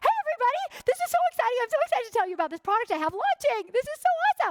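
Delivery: very high, loud, gushing, over-excited salesman voice. Advising people launching a product, the speaker demonstrates a sudden over-excited inflection. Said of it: "why did your voice go like that all of a sudden".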